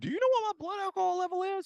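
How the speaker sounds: voice shooting up very high, high-pitched. Retelling the listener's airport arrest, imitating him arguing with police in a high-pitched voice. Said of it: "Why does my voice get so high again?".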